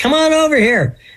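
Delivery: high, loud, yelling call.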